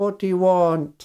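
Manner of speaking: suspicious, wary, distrustful tone. Storyteller voicing a middle-aged lady who looks at you: suspicious. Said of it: "looks at you suspiciously and says".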